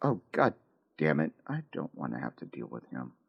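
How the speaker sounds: very low, hushed half-whisper under the breath. Voicing a character muttering an annoyed line: half-whispering under breath. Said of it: "what she's about to whisper under her breath".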